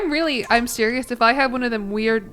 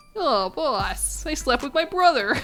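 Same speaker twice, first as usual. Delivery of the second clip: cartoon lackey character voice; 3 semitones higher than usual. Recruiting criminals, the speaker voices a new henchman answering the boss, henchman voice. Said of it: "Henchman voice".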